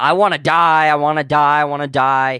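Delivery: mock yelling over and over, man's voice. Retelling a man being pulled from the apartment building, imitating a man yelling. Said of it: "and he's yelling".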